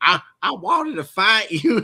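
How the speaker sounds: put-on very high-pitched Texan accent. Marine veteran retelling a Texas friend's words from the Corps; Texan accent impression. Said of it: "I get to do their voice".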